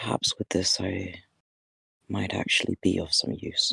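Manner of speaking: soft, quiet murmured words. Voicing a character who speaks quietly to someone close: quiet voice. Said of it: "just quietly say".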